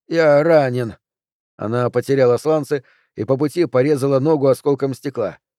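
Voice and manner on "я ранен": groaning. Narrating Harman, still on his knees, calling out to Hanna, moaning. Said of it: "застонал он".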